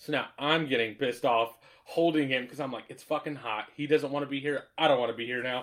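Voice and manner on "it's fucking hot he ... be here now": normal talking voice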